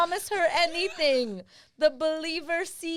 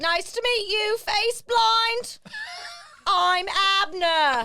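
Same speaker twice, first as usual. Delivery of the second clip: put-on character voice in British accent; 4 semitones higher than usual. Improvising a comedy story, voicing the character Abner in a British accent. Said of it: "And that's my British accent".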